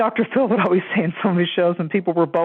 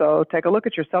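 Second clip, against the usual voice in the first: put-on flat, deadpan, expressionless voice. Retelling a comedy skit's psychologist answering a patient: imitating Nora Dunn's deadpan doctor. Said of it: "this same deadpan look on her face, totally no emotion".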